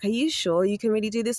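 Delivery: put-on luring, seductive, devilish tempter voice. Voicing the lingering voice in the back of the speaker's head, mock seductive voice. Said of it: "it's like a seductive voice as well".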